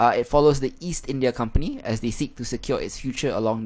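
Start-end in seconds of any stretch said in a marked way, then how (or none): none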